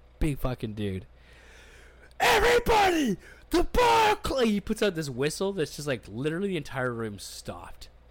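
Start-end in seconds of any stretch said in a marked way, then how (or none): 2.2-4.5 very high, drawn-out holler. Retelling the bar's security guy announcing closing, retelling a yell. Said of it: "the guy starts yelling".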